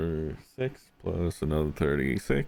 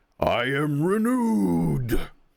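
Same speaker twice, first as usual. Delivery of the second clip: very high-pitched, big, thunderous booming voice; 12 semitones higher, 5 dB louder than usual. Narrating the scene after the fastball special, voicing Cairn: thunderous Cairn voice. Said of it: "in his thunderous voice right now".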